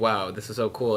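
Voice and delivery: plain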